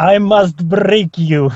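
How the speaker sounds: put-on Russian accent. Guest asked to repeat a line for the listeners, Russian accent. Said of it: "I hope that was a good enough uh, Russian accent".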